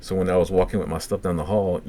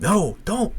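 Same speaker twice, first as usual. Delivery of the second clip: imitated scream, much higher; 13 semitones higher than usual. Telling a story, retelling how Kyle screamed a man's name through the windows: retelling a scream. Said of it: "screaming like this dude's name".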